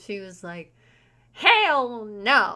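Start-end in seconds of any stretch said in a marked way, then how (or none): 1.3-2.6 put-on blunt Southern Texas woman's accent. Retelling a woman's reaction to the speaker's new interest, Southern Texas accent. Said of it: "with her Southern Texas accent".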